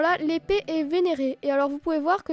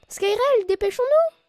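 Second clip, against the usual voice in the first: put-on small, high, girlish little girl voice; 7 semitones higher, 3 dB louder than usual. Voicing a companion character while playing a game, in a little girl voice. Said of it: "J'essaye de faire la petite voix de fille".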